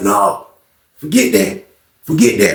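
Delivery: furious, flat, dismissive, very angry tone. Retelling how a man refused to stay out of it: imitating someone super mad. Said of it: "he's super mad".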